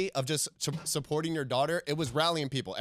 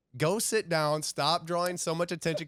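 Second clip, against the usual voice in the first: ordinary talk, nothing marked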